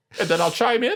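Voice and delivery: very high-pitched, squeaky voice.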